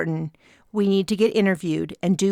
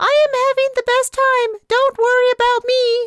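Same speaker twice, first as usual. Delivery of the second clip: loud, high, squeaky electronic falsetto; 6 dB louder than usual. In a story, one character speaks for Pox on screen, in a high electronic falsetto. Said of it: "In a high electronic falsetto".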